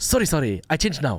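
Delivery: put-on Japanese accent with apologetic tone. Retelling apologizing to a driver over a wrong booking: japanese accent. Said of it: "I had to do the Japanese accent".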